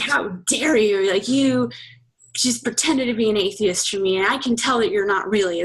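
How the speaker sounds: mock disgusted, disdainful tone. Retelling his biggest complaint after the breakup: imitating disgust and disdain. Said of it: "it was said with such disgust and disdain".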